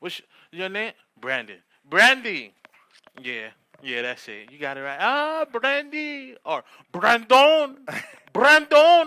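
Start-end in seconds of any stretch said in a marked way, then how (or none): 5.0-9.1 put-on Spanish accent, very high, loud and slow.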